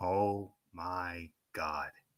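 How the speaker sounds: barely audible, very quiet, low mutter under breath. Speaker recalls his own reaction to a chair shot, muttered under breath. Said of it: "under my breath".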